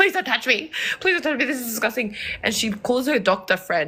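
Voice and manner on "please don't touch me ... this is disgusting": put-on desperate, panicked tone, rushed. Recounting a panic attack, the speaker reenacts their past self begging and pleading. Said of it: "I was begging. I was pleading".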